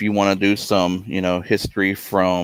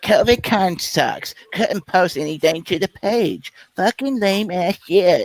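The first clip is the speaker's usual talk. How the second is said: very high-pitched put-on read-aloud voice; 11 semitones higher than usual. Reading out a hater's comment aloud: Nathan Payne voice. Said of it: "in exactly the same voice that Nathan Payne does".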